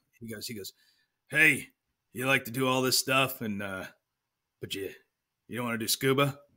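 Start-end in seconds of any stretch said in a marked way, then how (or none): 1.3-6.3 put-on gravelly, rough voice. Retelling what a sergeant said to him, imitating a gravelly voice. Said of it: "he's got that gravelly voice".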